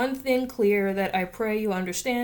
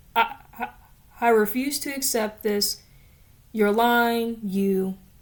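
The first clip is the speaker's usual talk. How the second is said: ordinary delivery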